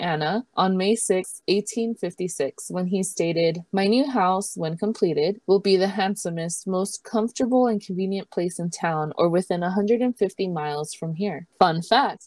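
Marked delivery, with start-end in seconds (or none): none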